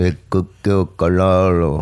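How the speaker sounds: badly done put-on Filipino accent. Retelling what an uncle said at the hospital: bad Filipino accent as Uncle Carlo. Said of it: "That's what he sounded like".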